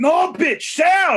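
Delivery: put-on accent from Dominican Republic. Speaker retells a man he woke up to in the living room; thick Dominican accent. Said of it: "he had like a really thick Dominican accent".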